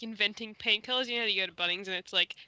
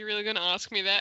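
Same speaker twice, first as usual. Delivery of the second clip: scornful, mocking, sarcastic delivery. Describing how they would answer a question, sarcastic. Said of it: "I would just be sarcastic".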